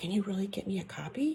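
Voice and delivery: hushed, very soft whispering voice. Reading a story aloud, the narrator asking for a copy: whispering voice. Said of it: "I went back to my whispering voice".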